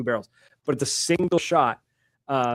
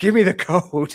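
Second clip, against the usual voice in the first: fierce, loud, high-pitched scream; 5 semitones higher, 5 dB louder than usual. Recounting an interrogation, the speaker acts out what she screamed: retelling a scream.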